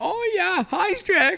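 put-on squeaky, very high pig voice with German accent. Recalling the pigs from Shrek with the others, the speaker imitates them: Three Little Pigs German voice. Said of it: "They sound like German".

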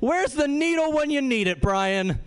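high, play-acted, taunting heckling yell. Recounting heckling a batter at a baseball game: retelling a heckling yell. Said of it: "I yelled".

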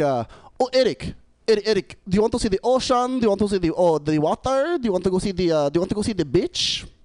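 put-on thick Filipino accent. Retelling what his mom always asked him while growing up: thick Filipino accent. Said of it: "with a really thick accent".

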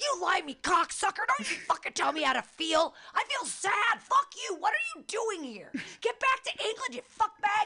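shrill, very high, put-on angry rant. Retelling how she yelled insults at a man, reenacting the yell. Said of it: "I yelled at".

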